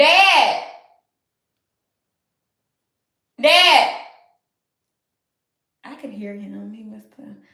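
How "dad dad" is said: loud, hollering, screaming voice. Speaker calling out for dad, screaming. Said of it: "Sorry, y'all, if I'm screaming in your ear".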